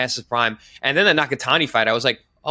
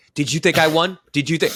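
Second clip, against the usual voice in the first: adamant, insistent, pressing hard; 4 semitones higher than usual. Retelling how a fighter questioned everyone after the fight: imitating someone adamant. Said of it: "he was, like, really adamant".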